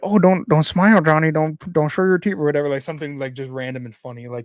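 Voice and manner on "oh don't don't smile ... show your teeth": odd, raised, puppet-like ventriloquist voice. Retelling what a man said during a photo, in his weird voice. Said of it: "in a weird voice".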